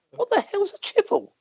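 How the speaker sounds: high, soft, baffled, puzzled tone. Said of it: "They'd be going".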